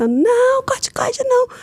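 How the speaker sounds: acted-out very high, shrill bellowing scream. Retelling being in hospital refusing medication: imitating her own past screaming. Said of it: "E eu berrando, gritando".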